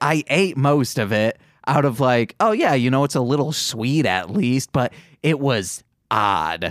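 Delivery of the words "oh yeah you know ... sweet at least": plain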